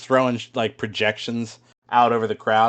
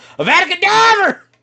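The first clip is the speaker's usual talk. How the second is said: put-on very high Southern accent shriek; 9 dB louder than usual. Retelling a video set in the Second Wizarding War in the South, retelling a Southern-accent scream. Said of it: "screams at the top of his lungs in his best Southern accent".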